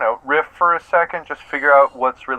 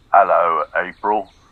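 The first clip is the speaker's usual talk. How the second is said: affected, put-on British accent; 9 semitones lower than usual. Opening a call to April, trying to throw her off, in a British accent. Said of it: "Why are you speaking in a British accent?".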